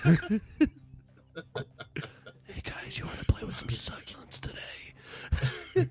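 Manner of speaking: creepy, breathy, whispered voice. Host puts on a voice the co-hosts banned on air, in a creepy voice. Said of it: "I'm gonna pull out the creepy voice".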